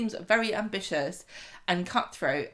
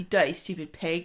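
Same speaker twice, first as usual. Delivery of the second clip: normal talking voice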